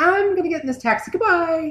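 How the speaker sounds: high, dismissive, brushing-off tone.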